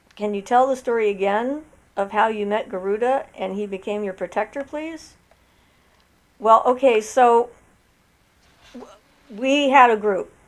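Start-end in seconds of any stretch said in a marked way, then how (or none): none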